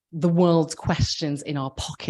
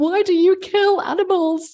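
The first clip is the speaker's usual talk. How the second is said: shrill, very high, loud, slow shriek through tears; 14 semitones higher, 6 dB louder than usual. Retelling a phone call to a man, retelling a tearful shriek. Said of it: "I shrieked down the phone at this man".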